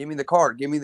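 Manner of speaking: ordinary delivery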